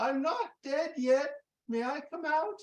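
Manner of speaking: small, very high voice, called out. Telling a story of a voice from inside a coffin, in Graham's small voice. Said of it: "a small voice that".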